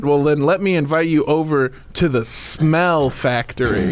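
ordinary talk, nothing marked

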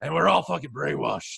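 rough, creaky voice, gravelly and ground out. Trying the line again: Alex Jones impression. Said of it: "that's close".

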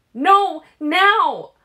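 piercing, very high, loud screaming shriek. A narrator reads a bleeding woman's line, shrieking. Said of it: "what she was shrieking".

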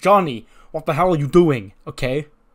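loud, alarmed voice.

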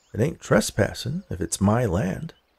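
ordinary talk

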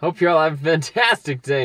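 way overexcited, over-the-top, over-enthusiastic, too eager. Redoing the sign-off after being asked why they whispered it, over-enthusiastic. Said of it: "Now I just sound like one of those obnoxious YouTubers who are like way over enthusiastic".

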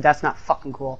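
usual speaking voice

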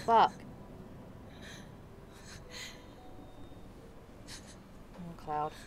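actually crying. Streamer playing a game, reacting to a character's last words, actually crying. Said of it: "Sorry, I'm actually crying".

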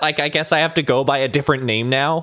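ordinary delivery

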